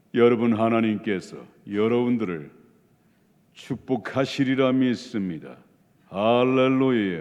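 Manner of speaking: mock deep pious voice. Mocking hypocrites who sound holy: imitating a lowered pious voice. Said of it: "이것도 아닌가?".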